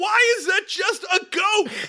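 very high, loud, slow scream. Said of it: "I sat there screaming".

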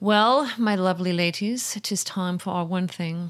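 sudden put-on posh British accent. Introducing the next segment to the listeners: put-on accent. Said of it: "I don't know why I went into that accent".

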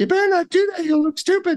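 very high, fast, squeaky voice. Showing how they changed a self-critical inner thought, in a Mickey Mouse voice. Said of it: "I change it to sound like Mickey Mouse".

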